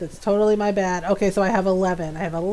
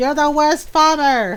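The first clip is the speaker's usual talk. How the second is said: disapproving, scolding, judgy farm animal voice, pitched up; 6 semitones higher, 4 dB louder than usual. Voicing judgmental ostriches scolding the farmer: voicing judgmental farm animals. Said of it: "the cows are judging me".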